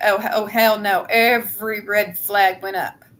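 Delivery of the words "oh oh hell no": ordinary delivery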